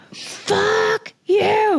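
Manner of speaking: very high, all-out shriek at full lungs. Speaker retells throwing a bag of skincare against the wall; retelling a scream. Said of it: "I screamed".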